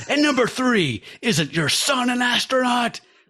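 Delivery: put-on screaming voice. Reading a comic's cop character's lines aloud: imitating a screaming cop. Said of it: "He's screaming so hard".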